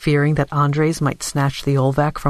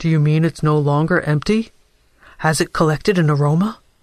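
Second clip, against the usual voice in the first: ordinary delivery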